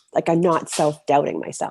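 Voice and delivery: ordinary talk, nothing marked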